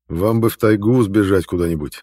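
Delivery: plain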